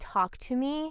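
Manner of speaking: ordinary delivery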